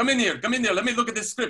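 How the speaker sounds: put-on Israeli accent. Retelling a friend's story, speaker quotes the man calling him in: big Israeli accent. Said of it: "He had a big Israeli accent".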